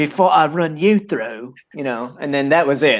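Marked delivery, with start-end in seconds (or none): 0.0-1.5 brief put-on English accent. Retelling his line on first meeting Guy of Gisborne, in an English accent. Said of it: "said like a couple of words with a quote unquote English accent".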